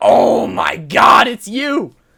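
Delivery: loud, slow, high-pitched excited shout.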